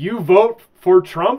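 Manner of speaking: very loud, high broken English. Retelling what a man said when he walked up: imitating broken English. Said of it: "says in somewhat broken English".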